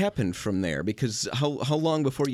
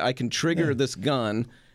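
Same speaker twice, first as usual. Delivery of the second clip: ordinary delivery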